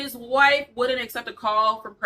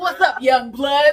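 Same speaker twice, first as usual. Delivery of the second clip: over-the-top, loud, exaggerated, cheesy old ad voice; 4 semitones higher, 7 dB louder than usual. Imitating old McDonald's commercials: imitating old commercial voice.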